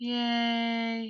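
drawn-out, sarcastic, unenthusiastic deadpan yay. Reacting to tree saplings with a flat, unenthusiastic yay. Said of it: "Don't I sound so excited? Not".

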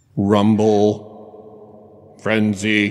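robotic voice with echo. Showing how a Transformer toy figure would sound: Transformer robot voice with echo. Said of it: "he would basically sound like this".

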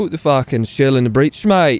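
put-on Australian accent. Attempting a British accent that comes out as put-on Australian accent. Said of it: "that was Australian".

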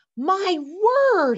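very high, loud exclamation. Mrs. McFuzz, called over by Rosemary to look in the box, exclaims. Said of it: "exclaimed Mrs".

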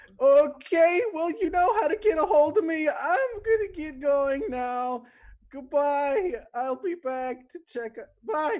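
tiny gnome voice, very high pitch, loud. Narrating a role-play scene, the speaker voices a little gnome, in a little gnome voice. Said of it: "and one of the little gnomes comes in".

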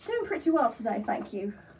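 polite, put-on British accent. Demonstrating accents on camera, the speaker answers a greeting in a British accent. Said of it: "First is British".

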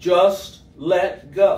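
deep, great voice, dropped low and grand. Telling a story where a hiker asks for guidance and gets an answer: great voice of God. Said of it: "the great voice replies".

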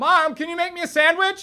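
very high, loud calling out. Showing how people raise their voice every day: raised voice calling out. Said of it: "how many times a day do we raise our voice".

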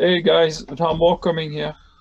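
shouting, calling out loudly. Blocking an entrance, warning the group that more are coming, shouting. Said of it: "And I shout".

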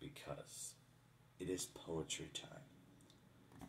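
slow, soft, low whisper.

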